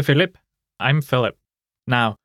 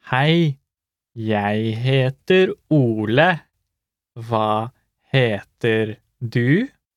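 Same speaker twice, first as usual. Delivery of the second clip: slow, careful pace. Repeating a lesson dialogue line for learners: slow, careful pace. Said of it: "Let's hear it slowly".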